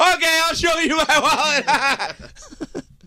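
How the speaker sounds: mock, very slow, very high, drawn-out shouting. Imitating a friend who showed his wallet: imitating someone yelling. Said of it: "And he'd go like this".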